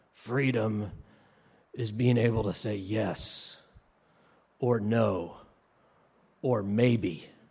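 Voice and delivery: rough, grainy, really gravelly tough-guy rasp. Retelling a Jeep commercial, quoting the man talking to the camera: gravelly voice. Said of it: "in this really gravelly voice".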